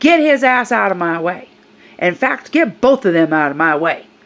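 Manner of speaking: mock rude, hostile, belligerent woman screaming. Retelling how an older woman screamed in a store: imitating a woman screaming. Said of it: "she screams at me".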